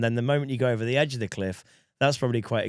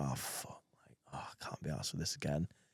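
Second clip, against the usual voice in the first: fed-up, weary, whispered mutter; 8 semitones lower, 16 dB quieter than usual. Acting out the fed-up shop worker hearing shouts: imitating a weary shop worker. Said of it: "the guy that's working the shop's like".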